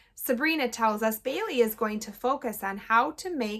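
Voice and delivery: plain reading voice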